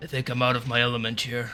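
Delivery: soft, mumbled, half under the breath. Voicing Makushak as a player hears him: Makushak mumbling. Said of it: "you just hear Makushak mumble".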